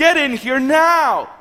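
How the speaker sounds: mock insistent, urgent yelling. A husband recounts his wife calling him from the bathroom, imitating his wife yelling. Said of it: "she began to yell at me and say".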